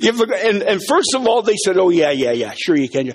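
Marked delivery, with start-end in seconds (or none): 1.8-3.1 cynically sarcastic tone. Retelling a guard's reply to a request to visit: imitating a sarcastic guard. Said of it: "cynical, sarcastic".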